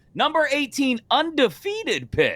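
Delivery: very high voice, breaking and cracking. Speaker previewing the undefeated pitt game, voice cracking. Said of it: "My voice cracked when I said that".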